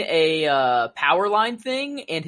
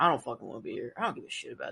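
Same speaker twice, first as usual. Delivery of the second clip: whispered, fed-up, can't-be-bothered grumbling; 5 semitones lower, 10 dB quieter than usual. Retelling the look on a costumed figure's face: imitating someone who doesn't want to be there. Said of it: "That dude doesn't wanna be there".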